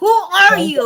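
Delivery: very high, very loud shrill shriek. Retelling screaming at a young apprentice: imitating her own scream. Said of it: "I did scream".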